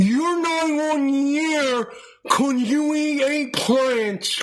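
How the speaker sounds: acted drooling, slobbering speech from mouth's side. Mocking critics by imitating how they sound: mocking drooling voice. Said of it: "You're drooling out of the side of your mouth".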